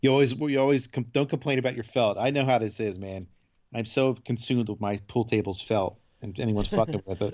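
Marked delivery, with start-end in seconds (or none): none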